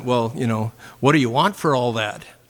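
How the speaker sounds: put-on speaking with Minnesota accent. Retelling what he asked the man who filled his car with gas, in a Minnesota accent. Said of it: "in my Minnesota accent".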